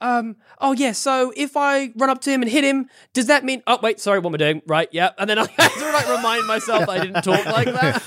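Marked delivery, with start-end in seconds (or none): 0.0-3.6 put-on New Zealand accent, pitched up. Recalling asking the DM a question while still in character, New Zealand accent. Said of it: "playing a character with like a New Zealand accent".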